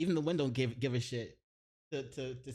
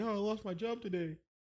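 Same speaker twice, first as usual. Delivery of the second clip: high, fake-tearful crybaby whine and moan; 8 semitones higher than usual. Acting out someone telling her they lost their job: mock crying complaint. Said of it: "come crying to her like".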